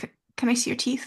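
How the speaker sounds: very quiet, hushed, slightly high stumbling stammer. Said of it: "very quietly".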